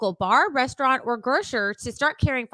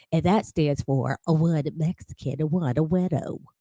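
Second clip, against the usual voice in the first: silly, funny, fake put-on advertisement voice; 8 semitones lower than usual. Reading another sponsor ad aloud as the other speaker urges: put-on funny ad voice. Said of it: "do the next one in funny voice too".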